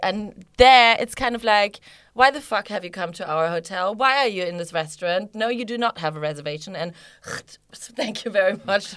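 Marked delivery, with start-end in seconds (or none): 2.1-8.9 mock haughty, dismissive, rude, snooty voice. Describing a hotel visit, the speaker imitates the rude hotel staff. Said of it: "They are just fucking rude".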